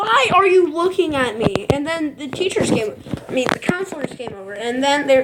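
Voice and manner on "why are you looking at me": high, very loud scream at the top of the lungs. Retelling how he screamed at the staring friends: imitating someone screaming. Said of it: "started screaming at the top of his lungs".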